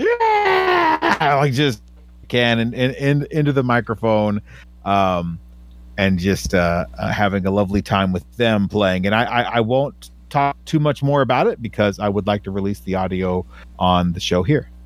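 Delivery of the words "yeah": put-on very high, excited yell in children's voices. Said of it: "both just yelling".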